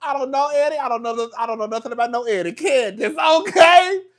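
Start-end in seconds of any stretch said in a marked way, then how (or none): 0.0-2.5 high, loud, feigned innocence, playing dumb. Acting out how Wendy is behaving right now, imitating Wendy playing dumb. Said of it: "that's basically how Wendy acting right now".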